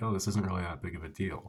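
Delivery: ordinary talk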